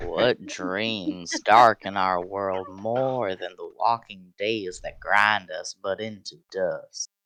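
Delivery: put-on voice dropped way down. Reading a macabre card line aloud on request: Matthew McConaughey voice. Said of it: "Better do this in Matthew McConaughey voice".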